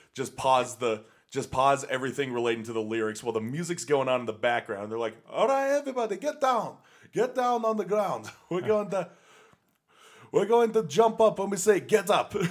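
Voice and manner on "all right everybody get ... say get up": fake Austrian accent, much higher. Retelling how the performers addressed the crowd live, in a poor Austrian accent. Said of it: "That's my poor Austrian accent".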